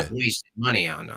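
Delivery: mock voice of a typical AI advertisement. Imitating the very common AI ad voice: imitating the common AI ad voice. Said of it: "the common A I ad voice?".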